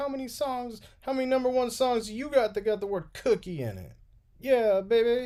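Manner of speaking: squeezed, very high put-on rock-star voice. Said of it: "that was my [name] impression".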